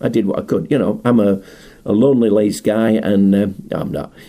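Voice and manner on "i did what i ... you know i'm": ordinary delivery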